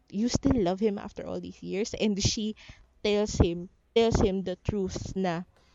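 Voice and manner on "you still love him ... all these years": ordinary delivery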